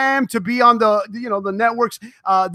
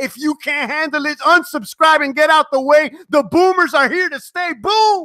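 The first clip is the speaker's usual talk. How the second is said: high, pumped-up, excited hype-man energy; 5 semitones higher than usual. Host answering viewers who asked why he's yelling; excited yelling. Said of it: "I'm yelling because I'm excited".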